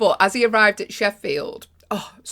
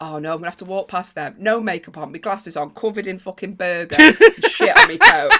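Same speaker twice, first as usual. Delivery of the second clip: loud, put-on mortified, panicked dread; 7 dB louder than usual. Retelling thoughts before walking past a queue: imitating own mortified panic. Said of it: "I was so mortified".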